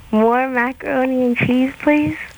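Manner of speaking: keen, hungry, eager little voice with zest. Reading the line again after a note to add zest, hungry and eager. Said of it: "like you're hungry and you want that scoop".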